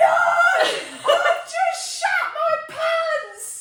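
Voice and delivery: very high, very loud, slow panicked scream. Speaker retells a woman screaming from the apartment bathroom, retelling a scream. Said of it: "she's screaming".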